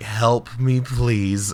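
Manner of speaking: mock scared, held-in panic, fighting to stay calm. Retelling asking a friend for help with a wasp: imitating a panicked plea, held in. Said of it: "trying not to, like, freak out".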